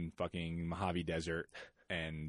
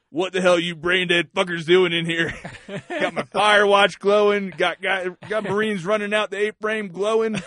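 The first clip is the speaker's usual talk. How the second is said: put-on drunk sergeant voice, much higher, louder; 13 semitones higher, 14 dB louder than usual. Recounting the platoon sergeant walking in on the Marines: imitating a drunk sergeant. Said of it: "drunk off his ass".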